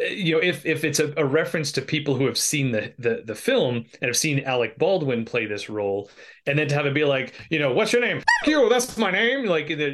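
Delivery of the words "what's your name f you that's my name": high, theatrical, stagey vaudeville patter. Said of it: "is that, like, vaudeville?".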